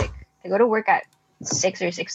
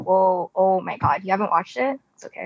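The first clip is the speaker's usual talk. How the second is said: plain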